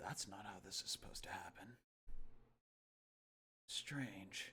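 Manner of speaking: whispered muttering under the breath. Narrating a staring figure who mutters to himself; muttered under breath. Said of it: "you hear him mutter under his breath".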